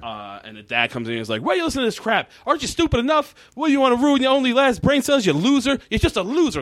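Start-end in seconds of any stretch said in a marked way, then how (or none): 1.4-6.6 mock very high screaming tirade. Retelling an episode where the dad yells at his son: imitating a dad screaming. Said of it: "screaming and screaming at him like that".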